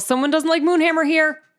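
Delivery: high-pitched in-character yell. Answering a voice heard in the head: yelling in character. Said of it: "I just kinda yell".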